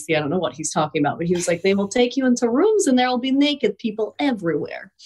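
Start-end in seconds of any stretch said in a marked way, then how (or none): 1.6-4.9 put-on thick Eastern European accent, pitched up. Retelling what someone said, doing it in a Gru accent. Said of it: "I'm doing like a Gru accent".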